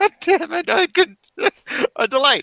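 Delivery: laughing while talking. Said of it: "I just burst out".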